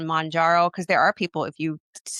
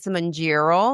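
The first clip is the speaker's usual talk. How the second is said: put-on good, clear Midwestern accent. Naming the medication as a joke: good Midwestern accent. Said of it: "like a good Midwestern accent".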